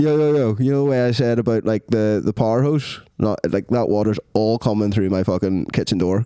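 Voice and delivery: ordinary talk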